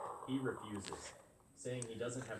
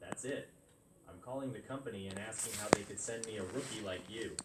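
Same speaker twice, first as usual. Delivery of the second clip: ordinary delivery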